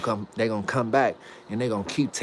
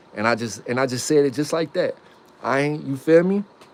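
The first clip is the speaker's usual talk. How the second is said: plain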